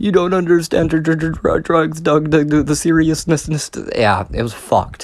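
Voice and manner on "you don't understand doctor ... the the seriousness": put-on high bawling, stammering on the "dr" sound. Retelling a hallucination, quoting Sally crying to Doug: imitating Sally bawling. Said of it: "bawling her eyes out, just fucking crying".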